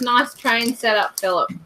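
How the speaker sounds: ordinary talk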